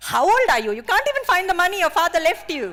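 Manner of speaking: very high, very loud, shrill, booming scolding tone. Speaker retells what her aunties in india would say; imitating her aunties. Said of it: "I know what my aunties will say".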